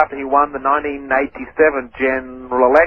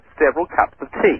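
ordinary talk

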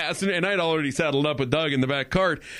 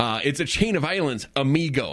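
plain

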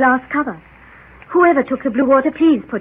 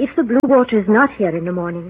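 ordinary delivery, nothing marked

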